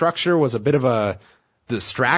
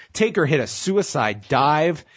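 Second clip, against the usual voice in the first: plain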